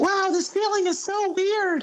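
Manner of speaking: very high, small, shrunken put-on character voice. A player hops onto another character's back and reacts in a put-on in-character voice. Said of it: "I like that voice".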